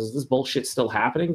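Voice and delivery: plain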